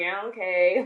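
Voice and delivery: dismissive, eye-rolling tone. Retelling own past reply to an aunt's prayers: imitating a dismissive eye-roll reply. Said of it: "I would roll my eyes and be like".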